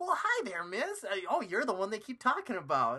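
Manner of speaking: high, loud, swooping, goofy, annoying voice. Mocking a character in the movie: Topher Grace impression. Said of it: "And then he's like".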